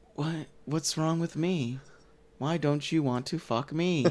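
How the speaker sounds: bored, flat, low, utterly uninterested delivery. Imitating a movie character who keeps asking why he won't sleep with her: bored imitation of Gal Gadot. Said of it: "she wants it in the most boring way. Like, she just keeps being like".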